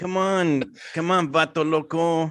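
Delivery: put-on Latin American accent.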